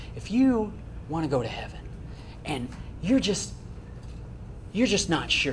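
whispery altar-call style, into microphone. Recounting what a man said during an altar call, in a whispery altar-call voice. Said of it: "that altar call voice, kind of whispery into the microphone".

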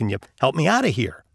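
ordinary delivery

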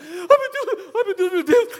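play-acted frantic, high, panicked cries. Retelling how she panicked when they were about to miss the flight, imitating panicking. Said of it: "ela entrou em pânico".

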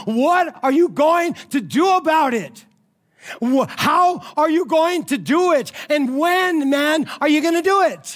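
worked-up, carried-away shouting, high and drawn out. Explaining a teaching, the speaker asks the listener questions, in excited yelling. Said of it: "I'm just getting excited".

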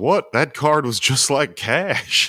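indignant, high-pitched and slow.

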